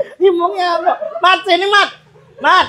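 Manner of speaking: laughing while calling out.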